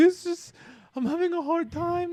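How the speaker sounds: very high, weird, put-on Brazilian accent. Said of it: "in her weird, uh, Brazilian accent".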